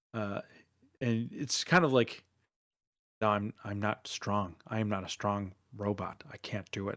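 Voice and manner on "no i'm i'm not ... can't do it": quiet, under-the-breath muttering. A robot character heard talking to himself, Norm talking to himself very quietly. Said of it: "but like under like really quietly".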